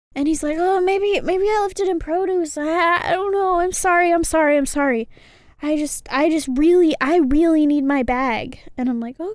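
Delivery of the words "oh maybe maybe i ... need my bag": mock-stressed tone, louder and slower. Telling about searching for a man's lost bag, quoting him: imitating a stressed man. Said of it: "he's really stressed".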